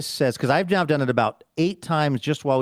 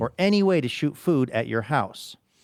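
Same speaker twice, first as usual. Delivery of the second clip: usual speaking voice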